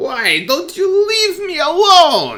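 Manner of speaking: put-on cackling old lady voice. Voicing an old lady who looks back at her chasers: cackling old lady voice. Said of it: "the old lady looks over her shoulder and cackles".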